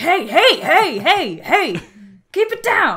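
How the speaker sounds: swooping, drawn-out delivery with stretched words. Voicing a bartender who tells the loud group to keep it down. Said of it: "the bartender's like".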